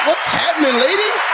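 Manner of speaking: hyped, very high, excited belted shout.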